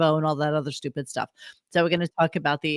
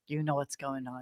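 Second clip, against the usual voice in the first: put-on much softer, hurt little-kid voice. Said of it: "She's like a five-year-old with a skin knee".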